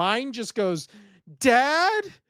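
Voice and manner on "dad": high, loud, put-on frightened child voice. Parent imitating son waking up alone, imitating a fearful child. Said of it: "with just fear in his voice".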